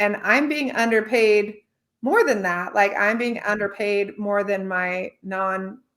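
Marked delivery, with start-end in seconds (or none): none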